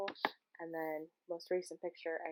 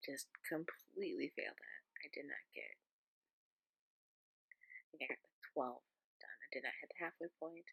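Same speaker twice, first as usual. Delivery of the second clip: quiet whisper, lower and quieter; 4 semitones lower, 8 dB quieter than usual. Talking to camera late at night while people are asleep: whispering. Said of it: "kind of whispering 'cause people are asleep".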